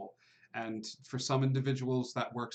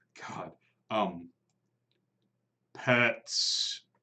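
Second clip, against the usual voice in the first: rough, gravelly put-on creature voice; 3 semitones lower, 3 dB louder than usual. Voicing something that has never talked before, in a gravelly voice. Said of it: "in a gravelly, gravelly voice".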